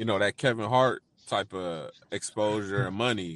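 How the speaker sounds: normal talking voice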